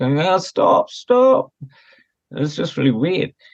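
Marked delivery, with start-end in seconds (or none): 0.2-1.5 put-on very high-pitched tiny-child toddler voice. Retelling how the surgeon suddenly broke down: imitating a toddler's voice. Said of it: "talking in, like, a toddler's voice".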